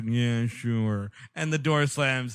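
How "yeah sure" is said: put-on dopey, dim-witted, dull-sounding voice. Retelling an old console commercial, imitating a dullard employee. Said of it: "a dullard".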